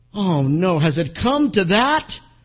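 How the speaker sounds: shocked. Telling a joke, the woman at the post office answers the clerk: aghast. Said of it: "And she aghast says".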